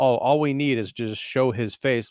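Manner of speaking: ordinary talk, nothing marked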